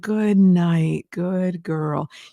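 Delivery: low, smooth, connected legato voice. Showing how people instinctively talk to their dogs, in a lower voice. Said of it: "you just drop into a lower voice".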